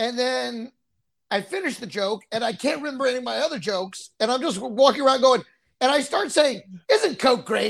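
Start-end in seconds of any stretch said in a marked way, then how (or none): 6.9-7.7 tongue-in-cheek, half-mocking, almost sarcastic cheer. Retelling a line said on stage: imitating own sarcastic remark. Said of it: "I'm saying it almost, like, sarcastically".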